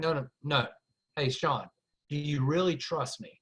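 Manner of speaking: low, earnest, hushed, serious voice. Telling an audience how Mike asked for trust, imitating Mike's lowered voice. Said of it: "when he lowered his voice and he said that".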